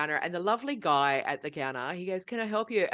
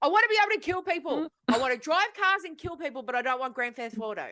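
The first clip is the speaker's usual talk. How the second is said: mock-loud voice, higher pitch; 7 semitones higher than usual. Retelling what he kept saying while people stared at him, retelling saying it loudly. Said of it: "I'm saying it really loud".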